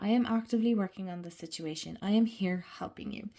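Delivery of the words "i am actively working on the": usual speaking voice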